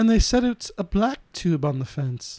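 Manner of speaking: low, mock British man voice.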